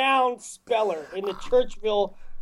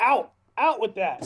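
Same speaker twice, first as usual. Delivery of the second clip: ordinary talk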